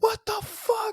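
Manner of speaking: put-on yelling. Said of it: "fucking yelling at him".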